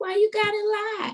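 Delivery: sudden loud octave jump into a very high register. Speaker making a point, voice going up an octave. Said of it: "You went up an octave on that".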